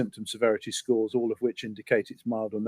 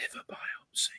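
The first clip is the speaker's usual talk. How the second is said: very quiet, hushed whisper. Naming a term not usually talked about, said very quietly. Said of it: "but I'll say it very quietly".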